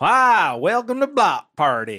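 high, swooping put-on cartoon yokel voice. Suggesting the host adopt a silly voice, a podcaster demonstrates a cartoon yokel voice. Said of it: "Start talking like a cartoon yokel".

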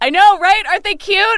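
light, easy calling-out delivery. A player describes their character calling out about the animals, yelling. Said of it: "And I yell".

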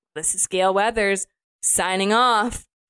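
ordinary talk

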